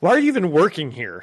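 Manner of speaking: irritated, annoyed, rushed, snapping tone. Dramatic reading of comic panels as Mary Jane: acting Mary Jane annoyed and hurried. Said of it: "I'm talking to someone I don't really like".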